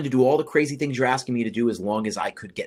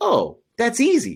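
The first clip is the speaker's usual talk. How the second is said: blasé, nonchalant tone, pitched higher; 11 semitones higher than usual. Retelling a classmate's offhand answer to a question: imitating a blasé tone. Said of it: "so blasé about it".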